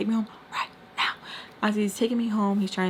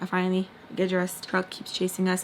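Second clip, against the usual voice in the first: normal talking voice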